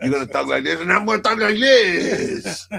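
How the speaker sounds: over-the-top put-on Cuban accent, very high. Mock two movie actors trying to one-up each other's accents, in a put-on ridiculous Cuban accent. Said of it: "trying to one up each other with their accents".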